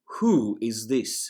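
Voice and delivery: loud, growling wolf voice. Narrator reads a wolf standing over Cole: growling wolf. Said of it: "she growled".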